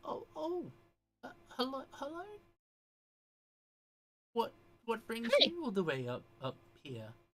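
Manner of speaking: put-on very high, surprised, startled elderly woman voice. Voicing an older lady stepping out of a tent: startled older lady voice. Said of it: "almost startled, uh, voice coming from the tent".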